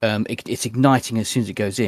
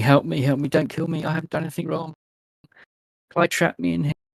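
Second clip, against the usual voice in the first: high, helpless, pitiful screaming; 7 semitones higher than usual. In a scene, a trapped woman set alight cries out: pitiful screaming. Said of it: "she is screaming in a pitiful, pitiful voice".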